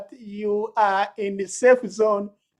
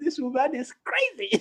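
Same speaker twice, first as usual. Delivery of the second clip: quiet, hushed half-whisper; 5 semitones higher, 5 dB quieter than usual. Retelling what he once half-whispered to you: imitating a half-whisper. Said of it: "One time he whispered to me".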